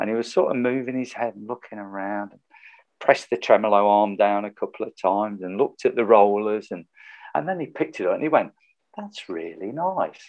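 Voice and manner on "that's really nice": very soft-spoken, gentle, hushed voice. Retelling how he praised the guitar: imitating a very soft voice. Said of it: "Dead soft voice".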